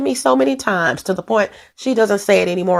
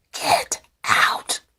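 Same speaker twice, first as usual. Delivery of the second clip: scary, creepy, breathy whisper. Trying the horror movie voice again: Amityville Horror voice. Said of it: "let me try it again".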